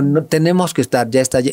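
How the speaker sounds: usual speaking voice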